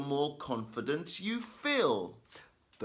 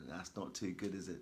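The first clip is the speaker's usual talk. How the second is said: normal talking voice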